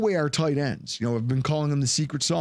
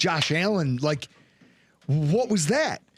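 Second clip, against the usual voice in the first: plain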